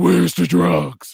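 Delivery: loud, harsh, rasping vigilante voice.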